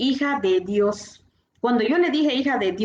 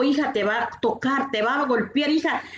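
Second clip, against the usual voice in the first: usual speaking voice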